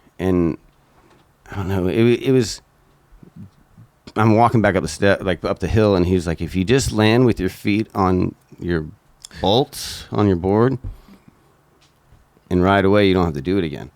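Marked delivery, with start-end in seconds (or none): 6.4-13.8 casual, nonchalant, offhand delivery. Retelling what a guy on the hill said: imitating a nonchalant remark. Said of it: "And he said it so, like, nonchalant".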